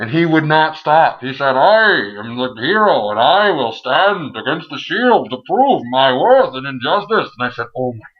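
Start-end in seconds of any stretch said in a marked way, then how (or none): 1.5-7.3 grand, put-on comic-book supervillain voice. Retelling how someone kept trying to sound like Bane: Bane voice. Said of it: "Why are you trying to sound like Bane?".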